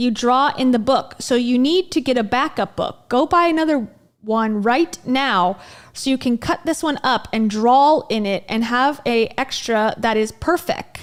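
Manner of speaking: ordinary talk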